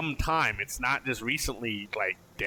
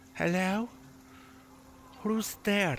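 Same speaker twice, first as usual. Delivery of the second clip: gentle, hushed, soft, high-pitched voice; 8 semitones higher than usual. Narrator voicing someone behind the door as the party arrives, soft voice. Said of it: "you hear a soft voice".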